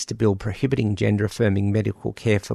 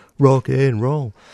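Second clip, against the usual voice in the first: put-on tough, masculine voice, louder; 3 semitones higher, 5 dB louder than usual. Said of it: "in my best Butch voice".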